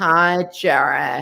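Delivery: very slow, unhurried, dragged-out hello. Retelling how she stretched her screen time: imitating own slow delivery. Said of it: "you talk really slow".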